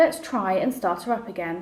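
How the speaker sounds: ordinary delivery, nothing marked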